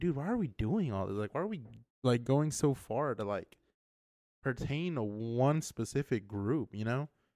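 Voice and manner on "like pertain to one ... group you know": normal talking voice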